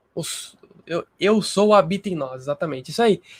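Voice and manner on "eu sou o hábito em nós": stressed "o", pitch lifted, falling at the end.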